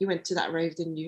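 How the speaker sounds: quiet, low whisper. Retelling what a cousin whispered into the speaker's ear, retelling a whisper. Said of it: "she whispered into my ear".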